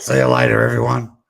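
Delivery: imitated speaking voice, creaky and rough. Showing the right way to do another person's voice: N K voice. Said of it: "this is N K's voice".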